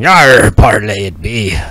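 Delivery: very slow, drawn-out dragon voice. Narrating the scene, the speaker voices the dragon Artemis addressing the party: Artemis voice. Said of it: "Artemis looks at you and".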